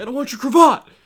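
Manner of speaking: put-on childish tantrum, shrill and very loud. Describing a childish mob boss character, imitating a mob boss throwing a fit. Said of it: "throw fits".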